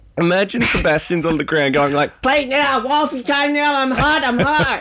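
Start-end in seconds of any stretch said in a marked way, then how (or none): 2.2-4.8 made-up geeky voice, much higher, slower. Imagining their made-up character on the ground, geeky Sebastian voice. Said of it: "this character we just made up who's got this real geeky voice".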